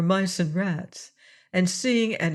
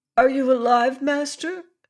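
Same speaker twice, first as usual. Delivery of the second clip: worried, fretful, anxious, pitched-up calling voice; 6 semitones higher, 4 dB louder than usual. Reading a story aloud, a cat calls up to her imprisoned master: anxious voice. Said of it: "called out in an anxious voice".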